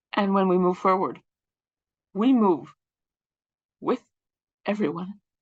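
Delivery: halting, tearful voice with breaks. Acknowledging civilians in Gaza in an academic setting, speaking through tears. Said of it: "Sorry for the tears".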